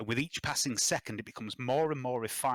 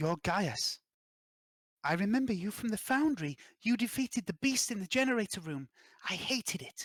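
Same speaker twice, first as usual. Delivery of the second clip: put-on ghostly, high, young little girl voice; 8 semitones higher than usual. Narrating a story, voicing the young ghostly girl speaking to Gaius: young ghostly girl voice. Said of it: "the young ghostly girl says".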